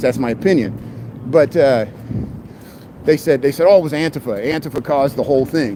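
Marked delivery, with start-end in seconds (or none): none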